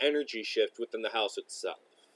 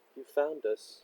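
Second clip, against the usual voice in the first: little voice; 3 semitones higher, 3 dB quieter than usual. Voicing someone who speaks from behind the players: small familiar voice. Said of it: "you hear a small but familiar voice".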